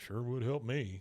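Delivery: muttered under the breath. Retelling a husband's aside during a vacation, muttered under his breath. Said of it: "Like kind of under his breath".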